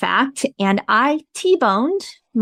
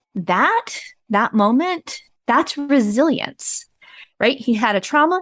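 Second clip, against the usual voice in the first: usual speaking voice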